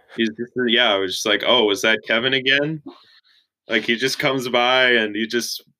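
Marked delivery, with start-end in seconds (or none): none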